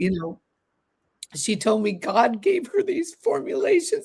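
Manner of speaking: choked-up, breaking voice. Talking to listeners, the speaker is crying, voice breaking. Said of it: "I don't know why I'm crying".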